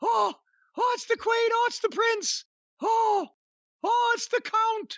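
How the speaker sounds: put-on very high gasping British accent.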